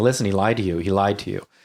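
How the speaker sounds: normal talking voice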